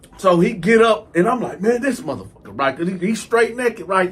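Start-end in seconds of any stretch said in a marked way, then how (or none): none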